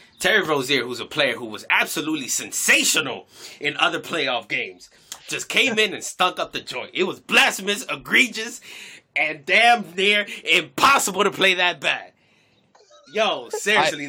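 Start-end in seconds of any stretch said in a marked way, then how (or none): 0.2-12.1 preachy, ranting sports pundit-style commentator delivery. Judging a player's bad game, channeling a pundit: Stephen A Smith impression. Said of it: "channel my inner Stephen A Smith".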